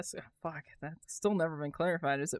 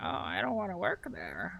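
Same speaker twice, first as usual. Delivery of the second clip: mocking, mimicking put-on voice; 2 semitones higher, 3 dB quieter than usual. Mocking the other speaker's complaint about a job: mocking imitation of the other speaker. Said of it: "don't sound like that".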